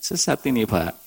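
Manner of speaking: said gently, softly and kindly. Speaker retelling what he gently told a crying man: retelling a gentle remark. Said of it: "Tapi dengan lembut saya bilangnya".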